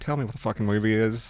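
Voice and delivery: ordinary talk, nothing marked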